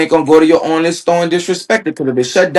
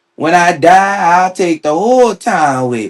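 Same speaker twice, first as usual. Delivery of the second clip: put-on rural country accent. Quoting a woman's infamous line, in a country Cajun accent. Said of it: "You gotta say it with the country Cajun accent".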